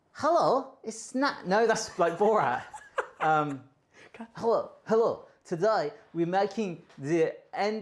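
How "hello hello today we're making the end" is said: rough, attempted put-on Dutch accent. Unsure of an accent, the speaker tries a line in an attempted Dutch accent. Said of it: "try a Dutch accent".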